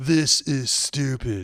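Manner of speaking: laid-back surfer tough-guy voice. Joking about security staff roaming the halls, saying the line as Keanu Reeves: Keanu Reeves voice. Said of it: "I'm Keanu Reeves roaming the halls".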